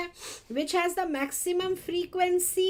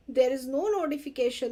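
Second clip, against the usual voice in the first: ordinary talk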